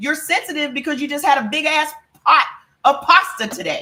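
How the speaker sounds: shouting. Scolding viewers about their diet: yelling at the audience. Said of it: "Now I'm yelling at you".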